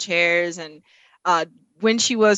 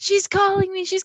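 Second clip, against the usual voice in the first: very high, acted-out, thrilled excited squeal; 13 semitones higher than usual. Retelling how she reacted when Suni called, imitating a scream. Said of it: "she started screaming like".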